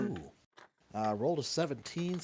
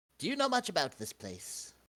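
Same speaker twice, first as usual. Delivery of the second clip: put-on sudden British accent, pitched up; 6 semitones higher than usual. Asking an imp in character about this place: British accent. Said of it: "Why do I suddenly have a British accent?".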